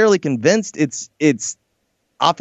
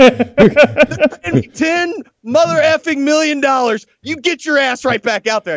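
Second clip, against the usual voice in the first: play-acted, shrill, very high, furious angry rant; 10 semitones higher, 3 dB louder than usual. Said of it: "rips him".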